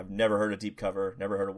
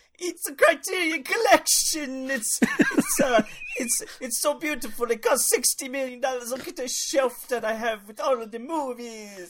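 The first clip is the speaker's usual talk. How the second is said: put-on very high, strong, thick Italian accent; 8 dB louder than usual. Asked to retake the line, do it in a really strong Italian accent like Jerry's. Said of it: "do it in an Italian accent".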